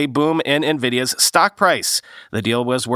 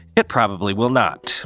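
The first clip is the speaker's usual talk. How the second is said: narrator voiceover voice, much lower; 5 semitones lower than usual. After quoting an analyst in a news item, the speaker comments in narrator voiceover voice. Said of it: "Narrator, voiceover voice".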